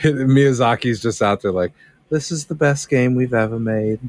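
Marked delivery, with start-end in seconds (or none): 2.1-4.0 full put-on British dude accent. Speaker imagines Miyazaki talking about his game, Miyazaki as a British dude. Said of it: "You made him sound like a British dude".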